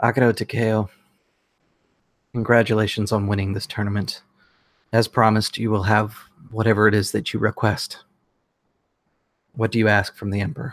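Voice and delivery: speaking in a whisper. Voicing the emperor greeting the tournament winner as they enter: whispering. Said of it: "who kind of whispers to you as you enter".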